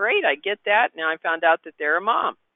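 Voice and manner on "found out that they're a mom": ordinary talk, nothing marked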